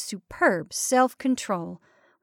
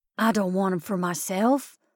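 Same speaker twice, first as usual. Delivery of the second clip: breathed in an even lower, quieter voice; 3 semitones lower than usual. Talking about eggs he handed over the night before, breathed in an even lower voice. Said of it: "breathed in a still lower voice".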